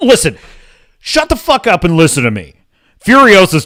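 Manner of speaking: mock aggressive, hostile tone. Showing how they would sound defending a movie: mock aggressive attitude. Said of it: "speak with this attitude about it".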